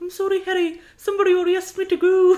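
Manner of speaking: put-on shrill, loud English-Scottish accent. Friends trade Harry Potter impressions, and one performs a Cho Chang impression. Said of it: "got a little bit of like English and Scottish".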